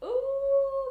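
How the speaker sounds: high, loud dog howl. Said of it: "literally shouting or barking or making that noise".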